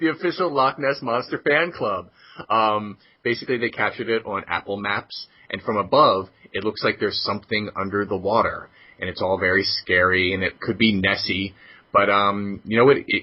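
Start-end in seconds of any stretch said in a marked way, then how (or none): 0.0-2.1 pitched-up, laughing through the words. Reporting a supposed loch ness monster discovery: laughing while talking. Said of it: "I can't say this without laughing".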